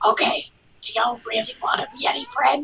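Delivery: hushed, quiet, slightly high whisper. Leaning toward the party during the game: whispering quietly. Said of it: "whisper quietly".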